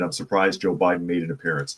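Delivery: plain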